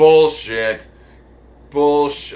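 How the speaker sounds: booming, very loud, trippy lizard voice. Calling out a claim about a password, in an LSD lizard voice. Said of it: "I'm doing that in that fucking LSD lizard voice".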